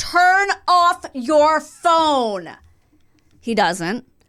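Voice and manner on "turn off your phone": mock slow, high, stretched-out shout. Retelling yelling at a stranger in a cinema: retelling a yell. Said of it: "So I once again yell".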